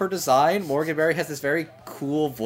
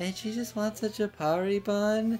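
airhead character voice, higher and quieter; 5 semitones higher, 7 dB quieter than usual. Describing a character one cast member plays, in Hululu's voice. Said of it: "she talks kind of like this".

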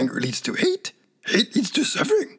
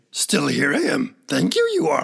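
put-on small, old alien creature voice. Podcast host lets Yoda introduce the episode: Yoda voice.

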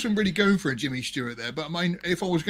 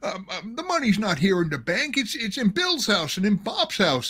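put-on hesitant, stumbling, high, halting old-film stammer; 5 semitones higher than usual. Retelling a Simpsons bank scene, doing the James Stewart character: impression of Simpsons James Stewart character. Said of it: "the guy comes out as James Stewart saying".

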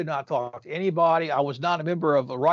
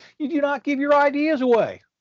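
very high, shrieking, screaming voice; 10 semitones higher, 4 dB louder than usual. Telling a story, quoting a man screaming at people: retelling a scream. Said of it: "Harlan's screaming at these people".

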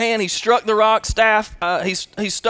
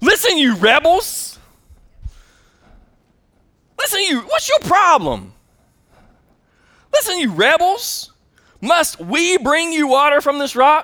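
put-on, high, contemptuous, scornful voice full of attitude; 6 semitones higher than usual. Retelling Moses addressing the gathered people at the rock, Moses with put-on attitude. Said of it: "He's got an attitude".

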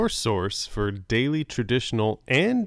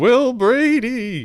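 very high, very loud, spooky ghostly radio announcer voice; 13 semitones higher, 8 dB louder than usual. Asked by the other speaker to try the voice, in a ghostly 30s radio announcer voice. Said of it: "I think I sound more like a ghost than an old 30s radio announcer".

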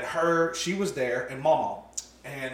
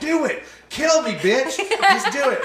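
mock laughing, taunting, higher and slower; 4 dB louder than usual. Retelling a parent's story, voice a man taunting his furious partner, with a mock laughing taunt. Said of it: "as she was screaming".

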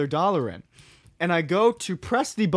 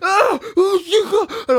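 slow, dragged-out, high-pitched panicked shriek; 14 semitones higher, 8 dB louder than usual. Retelling running back to friends at a vending machine, imitating own screaming. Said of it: "I'm screaming with a wild cherry Pepsi".

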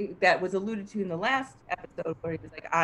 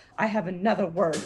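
mocking imitation of a smug, self-important man. Retelling how a self-important character talks, imitating a smug character. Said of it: "And he talks like".

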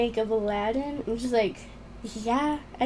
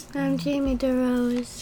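sounding dejected, sad and broken. A co-host introduces herself at the start of a recording, sounding sad. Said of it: "Jamie sounds so sad".

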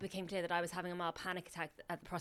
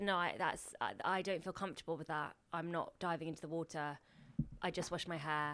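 ordinary talk, nothing marked

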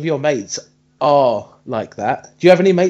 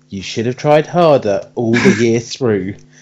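stern, scolding parental dad voice; 4 semitones lower than usual. Speaker recalls being upset over exams, imitating what Dad would have said. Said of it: "Dad voice would have gone".

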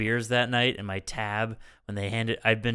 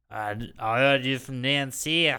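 put-on Australian accent; 2 semitones higher than usual. Quoting someone back in a put-on Australian accent. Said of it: "an Australian accent".

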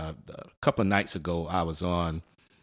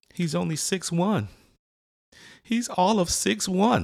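acted, very high, drawn-out, near-tearful announcer voice; 13 semitones higher, 3 dB louder than usual. Retelling what a game announcer said after a dunk: imitating announcer about to cry. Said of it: "Sound like he was about to cry".

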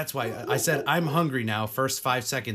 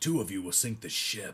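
voice sunk all the way deep; 4 semitones lower, 5 dB quieter than usual. Describing how a character talks; imitating a deep voice. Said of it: "except his voice is all deep".

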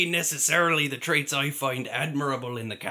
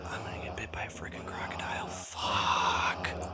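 very quiet, hushed mutter under the breath; 9 semitones lower, 9 dB quieter than usual. Narrating a character talking to himself out loud, in a whisper. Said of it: "but in a whisper".

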